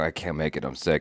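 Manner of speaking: fake, put-on raspy sick voice. Retelling calling a manager to skip work: imitating own fake sick voice. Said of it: "I was putting on the voice and everything".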